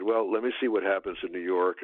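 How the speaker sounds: ordinary talk, nothing marked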